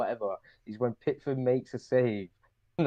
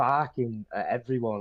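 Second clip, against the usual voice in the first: normal talking voice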